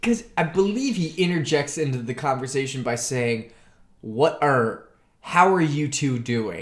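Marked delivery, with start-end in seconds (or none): 4.0-6.6 mocking, condescending tone. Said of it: "a very condescending".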